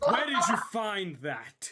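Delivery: enraged, very loud, high-pitched shriek. Voicing a furious woman confronting the others in a game, angry scream. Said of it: "And she screams".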